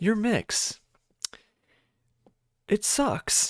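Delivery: put-on condescending, patronizing lecturer tone, very slow. Imitating an old professor, the speaker uses a mock-condescending professor voice. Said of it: "I'm going to talk like this, kind of imitating my old professor, kind of in a way that sounds a little bit condescending".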